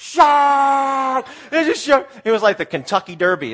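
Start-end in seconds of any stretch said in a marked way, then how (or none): 0.0-2.1 mock very high, loud, slow yell, "shark" stretched. Recounting a pool scare, retelling someone's yell. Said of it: "Krista yells".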